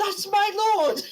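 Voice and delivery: full-throated, shrill, very high scream. Voicing a woman's reaction to the lord she is sworn to, screaming at top of lungs. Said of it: "screaming just at the top of her lungs".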